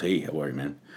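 deep, laid-back, casual cool-guy voice. Retelling meeting a tall man in a suit: imitating a deep cool-guy voice. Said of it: "he's this really deep, kinda cool guy voice".

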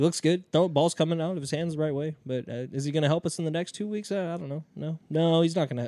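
soft, noncommittal, press-conference-style voice. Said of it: "that sounds like A J".

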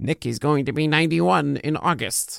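nagging, needling, pestering voice. Voicing a little nagging worry about fastball velocity: put-on nagging voice. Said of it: "I don't know why I just did that voice".

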